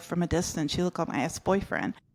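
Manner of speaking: whispered softly. Retelling tapping a man on the shoulder to say a line: imitating a whisper. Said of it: "I whisper in his ear".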